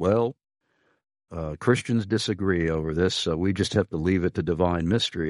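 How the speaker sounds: normal talking voice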